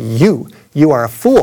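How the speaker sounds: mock very slow, deliberate, drawn-out pronouncement. Retelling a man with a loudspeaker answering a heckler, booming voice. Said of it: "he said with a booming voice".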